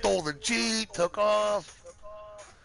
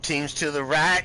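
plain

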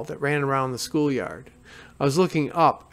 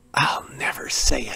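hushed whisper under the breath. Narrator reads her younger self in the schoolyard, whispering. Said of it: "I whispered".

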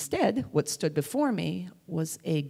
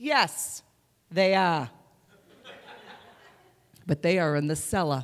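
put-on little Boston accent. Retelling the reply when asked whether Jody's parents were home; little Boston accent. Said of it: "in my little Boston accent".

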